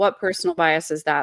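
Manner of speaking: put-on flat, emotionless deadpan tone. Retelling how he answered an accusation of bias: imitating a flat, emotionless reply. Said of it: "zero change in expression".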